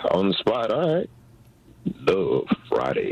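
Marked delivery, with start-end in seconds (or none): 2.0-3.1 deep, low baritone voice. Asked on the spot to say the phrase, he delivers it in a deep baritone voice. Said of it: "in that deep baritone voice of yours".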